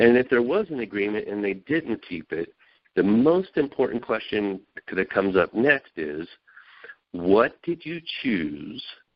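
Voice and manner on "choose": strong heavy stress placed on "choose". Speaker posing the key question after a broken agreement, stress on choose. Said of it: "I see the emphasis on the word choose".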